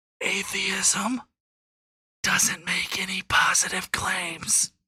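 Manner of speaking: slow, deliberate, drawn-out whispered aside. Explaining atheism to listeners, the speaker whispers it for them. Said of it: "I'll whisper it for you".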